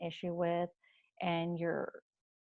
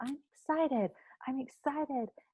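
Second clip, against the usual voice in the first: joyous, gleeful yell, high and loud, rising inflection; 8 semitones higher than usual. Explaining an exercise, the speaker shows how to say the phrase: yelling with glee. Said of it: "you're going to yell that really loud".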